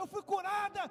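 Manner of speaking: put-on shout. Retelling a woman at a church who comes out shouting, retelling a woman's shout. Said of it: "a mulher sai gritando".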